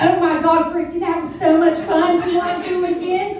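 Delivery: high, loud, cheerful, gushing, clueless mom voice.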